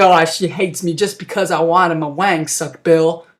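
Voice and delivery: put-on distraught voice in mental distress. Retelling a movie scene, acting out a character in distress. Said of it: "Brandon's all, like, a mental distress".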